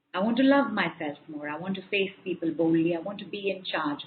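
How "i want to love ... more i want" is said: ordinary delivery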